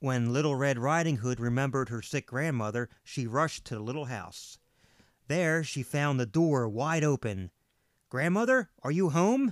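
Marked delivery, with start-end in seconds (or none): 8.1-9.5 hesitant, timid, high calling out. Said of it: "she called timidly".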